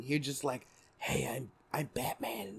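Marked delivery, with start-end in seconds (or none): 1.0-2.6 very quiet, deep, slow hero voice. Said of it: "he kind of had like a deep voice".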